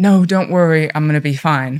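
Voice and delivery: mock weepy, tearful, crying. Retelling own words on the phone to someone from aa: reenacting own words said crying. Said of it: "crying and I went".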